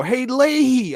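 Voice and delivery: high-pitched shout, as if across a room. Retelling greeting an actor across a convention floor: retelling a shout. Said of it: "I just shout it right out across the comm floor".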